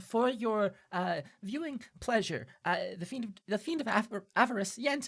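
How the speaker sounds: very high, jittery, stammering nervous servant voice. Storyteller voicing a servant presenting a covered tray: nervous, shaking servant voice. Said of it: "he's very nervous. He seems to be shaking".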